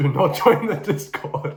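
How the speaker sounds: words broken up by laughter throughout. Telling viewers not to join the discord, laughing while talking. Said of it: "This shit's making me laugh".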